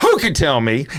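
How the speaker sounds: pitch swinging widely up and down. Retelling asking a class a question: imitating own pitch swinging up and down. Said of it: "I will throw my pitch up and down".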